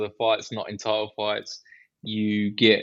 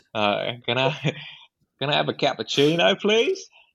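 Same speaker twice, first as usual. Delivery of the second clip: exaggerated, ridiculous put-on Australian accent; 4 semitones higher than usual. Ordering a cappuccino while putting on a ridiculous Australian accent. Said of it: "putting on the most ridiculous Australian accents".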